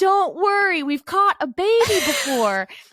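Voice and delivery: mock, very high, drawn-out yell. Retelling how nurses yelled during a birth: imitating nurses yelling. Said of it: "nurses yelling at me".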